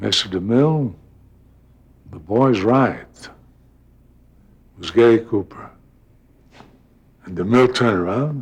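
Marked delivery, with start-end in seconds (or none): 0.0-3.1 quiet, off-stage-sounding voice. Retelling how an off-stage voice backed him up to the director, quiet Gary Cooper voice. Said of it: "a wonderful, quiet voice says".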